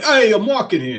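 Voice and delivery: put-on New York accent. Imagining a talking green color speaking: new york accent. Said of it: "New York accent and be like".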